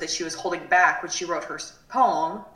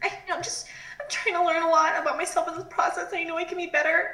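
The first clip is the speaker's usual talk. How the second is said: play-acted very high, weepy crying whine; 11 semitones higher than usual. Retelling a woman's words on the show, imitating a crying, whining voice. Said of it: "like crying, whining voice".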